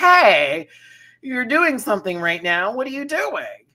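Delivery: mock a tad irritated, very high. Retelling how Rue asked a contestant what she was doing: imitating Rue sounding a little annoyed. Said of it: "Rue sounded a little annoyed".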